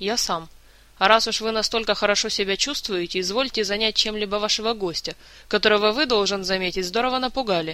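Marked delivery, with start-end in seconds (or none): none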